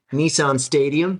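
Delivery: attempted American accent. Asking a musician about their goals, the interviewer says the answer in an american accent. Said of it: "your best American accent".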